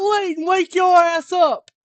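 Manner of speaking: loud, high southern yell. Retelling how they yelled someone awake, in a put-on Stone Cold Steve Austin yell. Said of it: "very rednecky, very, very southern".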